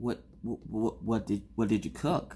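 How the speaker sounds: soft, fearful stammering.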